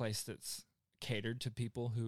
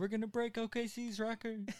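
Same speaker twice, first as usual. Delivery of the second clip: put-on auto-tuned scream, higher pitch; 12 semitones higher than usual. Retelling what the performer shouted at the concert: imitating a performer screaming in auto-tune. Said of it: "screaming at us in Goosebumps auto-tune".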